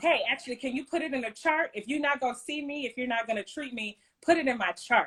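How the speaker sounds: ordinary delivery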